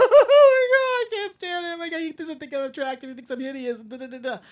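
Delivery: acted, shrill, loud, high blubbering wailing sob. Retelling a turned-down man's reaction alone in his room, imitating him sobbing. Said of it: "he starts sobbing like".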